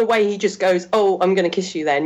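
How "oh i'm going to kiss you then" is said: ordinary talk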